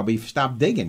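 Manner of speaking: usual speaking voice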